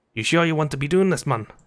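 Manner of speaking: clumsy, butchered, fumbling attempt at a Welsh accent. Voicing Mister Drippy's line to Ollie: Mister Drippy Welsh accent. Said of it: "he's meant to be Welsh".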